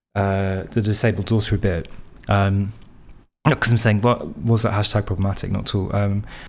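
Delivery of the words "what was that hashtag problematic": plain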